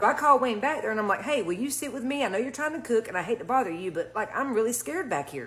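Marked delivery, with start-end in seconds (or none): none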